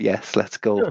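mock deadpan delivery. Retelling another speaker's flat one-word answer: imitating a deadpan reply. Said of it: "just deadpan, straight up".

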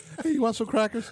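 offhand, very high, casual, nonchalant tone. Retelling a calm offer of snacks while a hunted pig dies: imitating a nonchalant offer. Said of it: "It's like nonchalantly".

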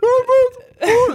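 put-on very high, slow, silly cartoon old man voice.

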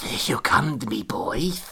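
hushed whisper. A man right behind the winner of the game whispers to him. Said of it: "he whispered".

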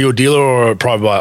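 ordinary talk

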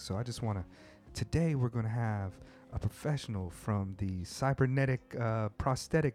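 easy-listening radio voice. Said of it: "like, easy listening voice".

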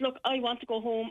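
normal talking voice

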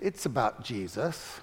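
soft, low, sickeningly sweet, syrupy tone. Retelling his own answer to a dinner question, in a mock-sweet syrupy voice. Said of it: "in a very sickening and sweet, syrupy voice".

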